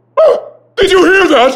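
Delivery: shrill, very high, loud shouting. [name], hands on his head, speaks to the narrator, shouting. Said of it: "You're shouting, [name]".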